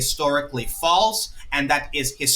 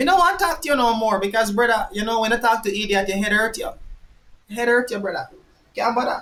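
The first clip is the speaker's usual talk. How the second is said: poor put-on Jamaican patois accent, pitched up; 8 semitones higher than usual. Speaking to Anthony in an accent he says he doesn't usually use, put-on Jamaican accent. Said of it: "I don't usually talk in this way".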